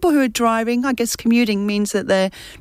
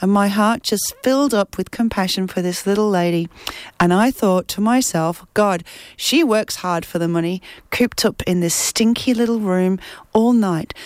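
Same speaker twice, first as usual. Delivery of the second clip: normal talking voice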